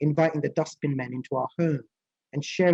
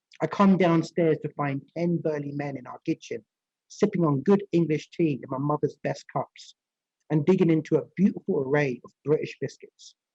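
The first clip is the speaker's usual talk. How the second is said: ordinary delivery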